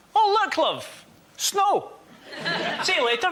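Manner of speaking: put-on Scottish local's accent. Retelling how Scottish people react to snow, imitating a Scottish person. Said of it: "Scottish people do this".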